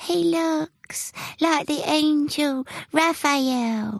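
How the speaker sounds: thin, very high falsetto voice. Flax speaks up about the man the cat went for, in a falsetto voice. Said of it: "Flax spoke in a falsetto voice".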